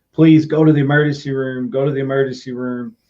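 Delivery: ordinary delivery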